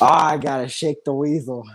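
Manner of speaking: put-on drunk man's voice. Telling about a drunk guy next to him at the Rockies game, imitating a drunk man. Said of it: "He's like drunk as hell".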